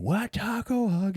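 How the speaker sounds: put-on sudden, piercing, shrill, very high shriek. Retelling a prank on someone in the boat shower: imitating a scream. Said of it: "you just start screaming".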